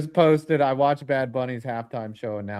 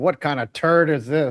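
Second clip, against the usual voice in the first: slow, dragged-out, displeased tone; 2 semitones higher than usual. Imagining what the watching commissioner says: imitating an unhappy Goodell. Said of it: "He's like".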